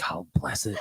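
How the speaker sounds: grandmotherly voice, words blurted out. Showing how a grandma's saying slips out now: grandma coming out in his voice. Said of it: "my grandma will come out of me".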